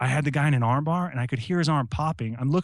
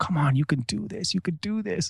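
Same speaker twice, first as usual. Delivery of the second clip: mock-encouraging tone, pitched higher; 4 semitones higher than usual. Retelling what she told him while he was sick, imitating encouragement.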